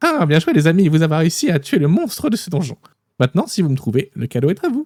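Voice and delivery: tiny, wee, little sprite voice. Game master speaking to the players as a sprite, in a small sprite's voice. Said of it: "la petite voix d'un farfadet qui vous dit".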